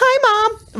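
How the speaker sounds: put-on tiny, sweet little kid voice, very high. A mother retelling her son's greeting from the bedroom, imitating a sweet little voice. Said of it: "the sweet little, ... voice".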